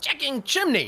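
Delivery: goblin-like creature voice, pitched way up. Playing a goblin character during a game: put-on goblin voice. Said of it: "But I'll say it in a goblin-y".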